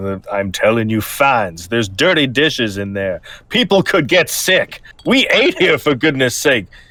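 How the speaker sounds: berating, scolding tone.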